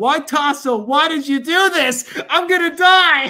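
long, high, loud, drawn-out wailing scream. Retelling how someone ran through the apartment: imitating someone screaming. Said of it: "running up and down the apartment screaming".

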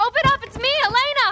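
loud calling shout.

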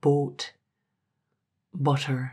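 accent shifting from Scottish to Irish. Narrator showing how their Scottish accent slips on certain vowels: Scottish accent flipping to Irish. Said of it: "everything flips to Irish".

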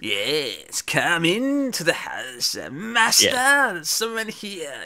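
slow, swooping sing-song servant voice, "yes" drawn out. Describing a show's servant announcing someone to the master: Igor-like servant voice. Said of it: "I did that voice because that's what it makes me think of".

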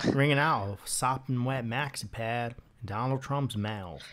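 slight hint of a Southern accent. Saying a string of phrases to the others, slipping into a little southern accent. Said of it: "Why do you keep going southern?".

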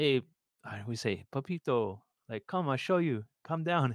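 imitated Cuban Spanish accent. Retelling what a first-generation Cuban man told him, in a put-on Cuban accent. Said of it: "he had a great accent".

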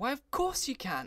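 very high, disbelieving, incredulous exclamation. Responding to the narrator's remark, he cries out incredulously. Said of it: "He cried, incredulously".

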